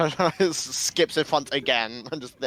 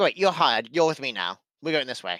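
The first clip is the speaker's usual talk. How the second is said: put-on little goblin accent. Retelling what a game character said, in a little goblin accent. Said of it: "doing like a little goblin accent".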